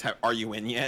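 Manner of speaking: put-on annoyed voice. Imitating a friend who asks if someone is logged in: imitating Toilet's annoyance. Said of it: "The amount of annoyance from Toilet sounds exactly like".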